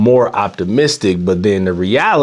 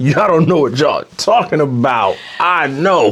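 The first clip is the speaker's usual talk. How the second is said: put-on, sure-of-himself know-it-all boast, full-chest, pitched up; 6 semitones higher than usual. Teasing another speaker by replaying their words: imitating a full-chest boast. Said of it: "You said it with your full chest".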